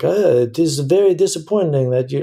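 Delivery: put-on French accent. Imitating a German fan criticizing the show: put-on French accent. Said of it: "I'm doing a French accent".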